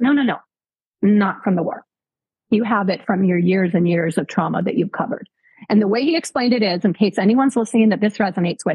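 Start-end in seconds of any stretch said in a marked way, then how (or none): none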